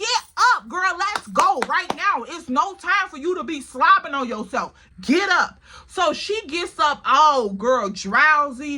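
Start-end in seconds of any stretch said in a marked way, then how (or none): 0.0-5.6 mock insistent, urgent, hurrying raised voice. Retelling trying to rouse a drowsy girl, retelling a yell. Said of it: "I'm yelling".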